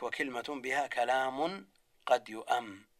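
plain

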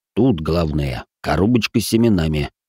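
ordinary delivery

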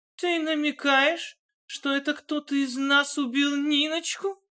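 very high, quavering, shaky, trembling voice. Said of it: "спросила дрожащим голосом Алла".

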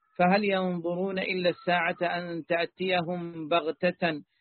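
ordinary talk, nothing marked

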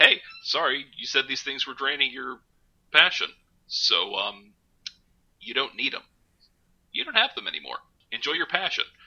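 calm, low-key, even, polite customer service voice. Recapping a show, the speaker acts out a character confronting another: imitating low-key customer service voice. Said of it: "just the low key customer service voice way".

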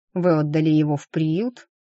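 plain reading voice

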